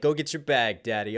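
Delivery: ordinary delivery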